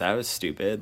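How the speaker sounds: usual speaking voice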